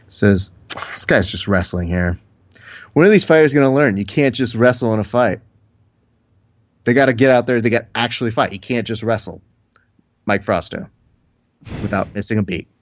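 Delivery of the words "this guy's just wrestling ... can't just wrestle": usual speaking voice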